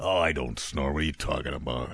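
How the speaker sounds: very deep, brutish cartoon brute voice. A dad denying his child's recording proves he snores: Bluto-like voice. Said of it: "My dad sounds kind of like Bluto".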